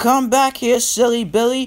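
calling out in a very high voice. Farmer McCall calls after Billy as he puffs away, crying out. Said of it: "cried Farmer McCall".

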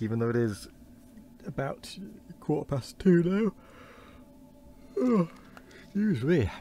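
sleepy yawn. Ending the reading part after a poor night's sleep, yawning. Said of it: "I'm still yawning".

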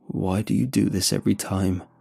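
ordinary talk

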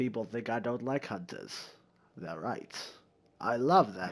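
very low, deep put-on narrator voice. Retelling what someone said about hunters, in Morgan Freeman voice. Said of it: "I'm gonna do the Morgan Freeman voice just because it's funny".

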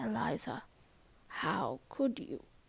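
very soft, hushed, quietly spoken words. A woman addresses the narrator, speaking very softly. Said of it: "she said very softly".

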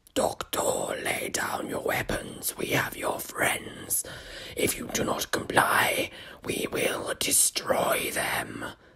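whispered, sour, wet creature voice. A creature threatens the Doctor over the intercom, in a sour, wet voice. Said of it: "a sour, wet voice".

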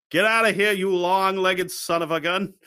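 put-on hillbilly New Hampshire accent with Boston sound. Quoting what he said to a friend, in a mock New Hampshire accent. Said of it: "They got that fucking New Hampshire accent".

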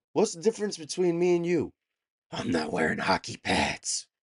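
loud movie-hero delivery with big pitch swings. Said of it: "my best, uh, Ba-, uh, Bale impression".

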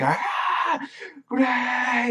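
mock shrill, piercing screaming cry, very high. Recapping an episode's ending, imitating Juvia screaming. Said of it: "just screaming".

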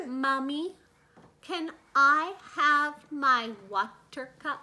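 very slow, careful, drawn-out enunciation. Retelling how the boy asks for his water cup: imitating someone speaking very slowly. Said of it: "He speaks very slowly".

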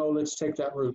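ordinary delivery

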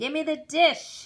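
loud, angry voice, high-pitched. The bean seller answers the narrator's repeated order, speaking angrily. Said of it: "he said angrily".

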